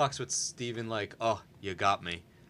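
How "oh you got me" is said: play-acted, super deadpan, flat no-emotion monotone. Speaker acting out a guardian joking with Stephen, imitating a deadpan reply. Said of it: "super deadpan, no emotion".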